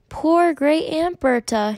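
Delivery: condescending, patronizing tone with lofty pity. An officer at the casket answers the woman's lie, condescending. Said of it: "he said in a condescending voice".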